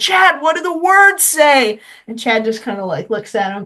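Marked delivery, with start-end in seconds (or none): 0.0-1.8 mock high shouted yelling. Retelling a fan in the crowd yelling a question: imitating a fan yelling. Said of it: "is yelling at me".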